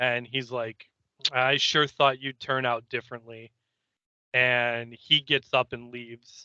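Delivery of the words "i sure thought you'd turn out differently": plain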